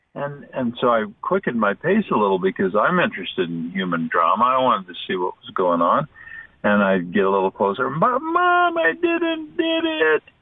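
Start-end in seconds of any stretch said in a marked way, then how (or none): 7.9-10.2 put-on very high, very slow, drawn-out child's yell. Retelling a walk behind a mother and son: imitating a little boy yelling. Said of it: "that little kid yelled".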